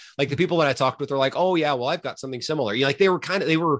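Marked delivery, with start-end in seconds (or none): 1.4-2.7 put-on a touch of Canadian accent. Quoting the people they talked with, in a slight canadian accent. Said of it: "bit of a Canadian accent there".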